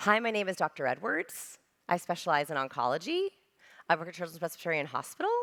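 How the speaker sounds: uptalk, every sentence end rising. Demonstrating how a doctor's introduction sounds with question inflection, rising at each end. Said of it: "So their vocal introduction sounded like this".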